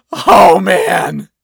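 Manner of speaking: put-on wheezy voice. Narrator reads the man's reaction after the princess's glance, wheezing. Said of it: "He wheezed".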